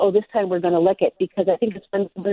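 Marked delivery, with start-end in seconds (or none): none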